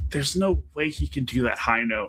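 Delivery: mock muttering under breath to herself. Speaker retells what Becca muttered under her breath, retelling a mutter under breath. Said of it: "muttering under her breath".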